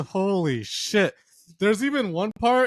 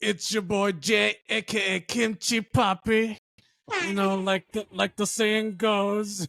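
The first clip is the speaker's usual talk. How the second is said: slow, croaky, drawn-out drawl; 2 semitones higher than usual. Introducing oneself as a co-host on the podcast: Trump impression. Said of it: "I'm trying to imitate Trump".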